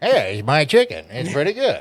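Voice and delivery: swooping, sing-song character voice, pitch swinging up and down. Joking about Colonel Sanders selling vapes: Colonel Sanders voice. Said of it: "I think it'd go a little something like this".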